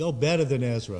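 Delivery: plain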